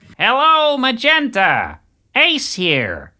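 very high-pitched, loud voice with big swoops. Reading a letter aloud, done in a David Lynch voice. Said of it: "Shall I read this letter from Ace in the voice of David Lynch?".

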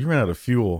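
ordinary talk

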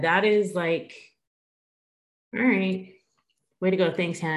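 crying while talking, tearful voice. Reacting to a moving story from Hannah, crying while talking. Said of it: "Make me cry this early".

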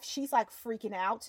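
ordinary talk, nothing marked

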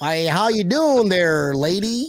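slow, put-on, drawling American Western accent. Imitating how another speaker sounds: imitating a Western accent. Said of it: "you just sound Western".

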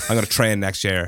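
usual speaking voice

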